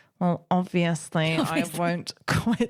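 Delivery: low, strained, through gritted teeth. Recounting Lisa's reply to a stern-parent warning, imitating Lisa through gritted teeth. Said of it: "like almost through gritted teeth".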